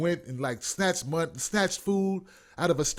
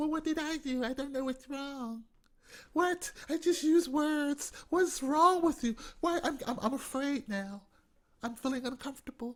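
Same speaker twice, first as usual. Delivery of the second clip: put-on innocent bewilderment, pitched up, stumbling over words; 9 semitones higher, 6 dB quieter than usual. Acting out how the lady acts after offending: imitating feigned innocent confusion. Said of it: "and then she acts like".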